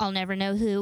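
ordinary talk

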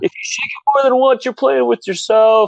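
put-on thick Chicago accent, yelled, very high. Retelling what a fan screamed at Wrigley Field: imitating a screaming thick Chicago accent. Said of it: "screaming from the door in, like, a thick Midwestern, like, Chicago accent".

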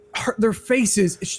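slow, high, moved, sad, choked-up voice.

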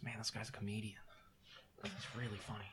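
very quiet, hushed whisper. During a role-play scene, a character makes an aside to another character: whispering. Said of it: "I'll whisper to Nyx".

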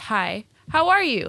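very enthusiastic, high, eager, drawn-out delivery. Retelling a customer's greeting at the register: imitating someone very enthusiastic. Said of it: "very, very enthusiastically".

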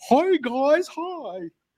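silly, exaggerated, over-the-top goofy voice, very high. Describing what comes to mind on seeing the show's new intro, over-the-top goofy voice. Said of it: "like an over-the-top goofy".

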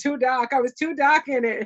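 Boston-style delivery, put on. Speaker retelling a complaint about lighting in a video, in a Boston accent. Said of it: "Here's my Boston accent".

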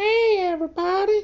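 cartoon voice pitched way up high. A creator recalls pitching a holiday character on the spot, in a Mr. Hankey voice. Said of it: "he's gonna talk like this".

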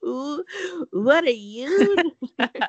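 high-pitched, slow, drawn-out voice. Retelling a TV show scene, quoting a laughing reply: the Californians voice. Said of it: "I sound like the Californians".

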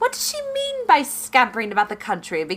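high character voice with swooping pitch. Doing a Pride and Prejudice quote a brother finds funny: Caroline Bingley voice. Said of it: "makes me do it all the time is Caroline Bingley".

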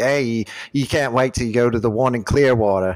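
heavily laid-on fake Australian accent. Describing a guy who took you out, speaking in a fake Australian accent. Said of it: "speaking in a fake Australian accent".

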